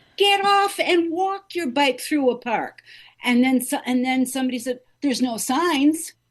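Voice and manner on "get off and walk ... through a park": play-acted pitched-up shout. Recounting bicycles clipping their skirt in the park, retelling a yell. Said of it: "and I'm yelling".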